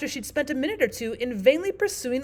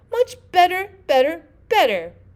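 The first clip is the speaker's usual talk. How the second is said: very loud squeak climbing upward in pitch; 6 semitones higher, 9 dB louder than usual. Narrated scene: the Queen goes on answering, her voice rising to a squeak. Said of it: "her voice rising to a squeak".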